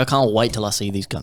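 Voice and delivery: normal talking voice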